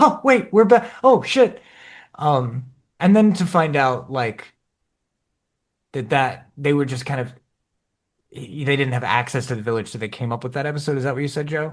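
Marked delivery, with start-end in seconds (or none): 0.0-1.6 high-pitched, loud, startled, blurted exclamation. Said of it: "and then I was like".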